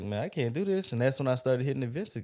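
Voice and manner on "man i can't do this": plain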